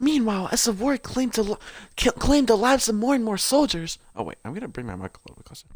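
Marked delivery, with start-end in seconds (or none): 0.0-4.0 stumbling, stuttering read, tripping over the words. A streamer reading aloud on stream, stuttering. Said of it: "I'm stuttering so much".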